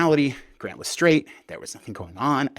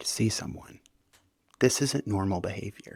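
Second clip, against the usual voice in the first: mock very soft, calm, gentle voice; 5 dB quieter than usual. Retelling what he said while the speaker was sobbing: imitating his softest, calmest voice. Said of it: "in the softest, calmest voice".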